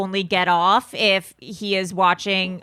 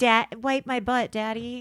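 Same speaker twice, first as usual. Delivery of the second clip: put-on, cutesy baby talk voice; 3 semitones higher, 5 dB quieter than usual. Joking about what a reality show couple's baby talk sounds like: mock baby talk. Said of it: "does baby talk to him".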